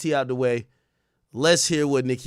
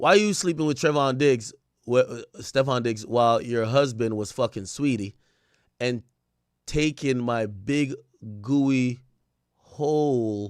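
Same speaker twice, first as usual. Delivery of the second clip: usual speaking voice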